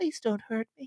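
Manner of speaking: tiny, high, small little creature voice. Imagining how a creature with pointy arms and legs sounds: little creature voice. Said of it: "their little voice is like".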